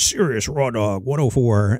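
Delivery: demonic devil voice. Recalling the station id that ran at the top of the hour, devil voice. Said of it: "with the devil voice".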